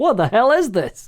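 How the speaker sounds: high, baffled, bewildered tone. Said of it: "you click on something and you're like".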